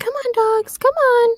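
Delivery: very high, sweet coaxing calling voice. Recounting how a man called to the dogs: imitating a sweet voice. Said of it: "just a sweet voice".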